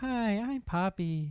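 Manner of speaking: very robotic, machine-like delivery. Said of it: "Very robotic".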